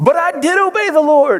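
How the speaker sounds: put-on very high, childish, whiny kid voice. Reading Saul's reply to a scathing rebuke, in a mock-whiny kid voice. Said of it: "your kid's best whiny voice".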